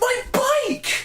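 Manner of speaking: put-on little child voice, very high. Playing Nickel as his bike on the curb gets run over, in Nickel's kid voice. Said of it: "He has like a kid voice".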